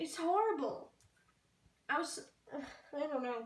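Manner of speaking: crying, tearful voice breaking. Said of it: "Sorry if I'm crying".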